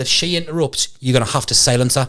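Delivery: ordinary delivery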